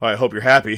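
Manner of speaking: mock, wry, sarcastic, playful needling tone. Retelling what he said to Punk backstage after the match, retelling a sarcastic jab. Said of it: "sarcastically having fun".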